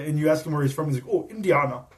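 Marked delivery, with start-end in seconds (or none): 1.1-1.8 put-on very thick, heavy German accent, laid on thick. Retelling an opponent saying where he's from: heavy german accent. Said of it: "with a very heavy German accent".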